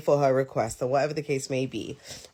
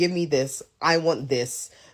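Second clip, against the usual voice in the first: put-on curt, blunt, demanding tone. Retelling how some clients ask for things: imitating blunt demanding clients. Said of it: "they can be very direct".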